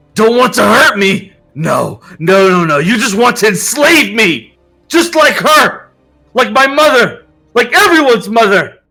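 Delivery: enraged, loud, high-pitched furious screaming outburst. Reading a story aloud, a character accusing a friend: screaming in anger. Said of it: "as he screams about Pandora".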